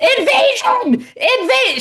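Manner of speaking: put-on very high, shrill, loud alarmed scream. Retelling how a woman raised the alarm, retelling her screaming alarm. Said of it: "She's just screaming".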